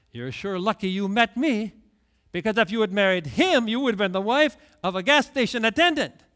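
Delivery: put-on smug, pleased-with-himself, self-satisfied bragging. A man recounts what he told his wife about her old boyfriend: retelling a smug remark. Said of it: "kind of smugly".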